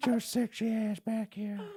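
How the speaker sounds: put-on high, creepy old-man style voice. Joking about someone scooting his legs: old creepy guy from Family Guy voice. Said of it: "That sounded like dead on".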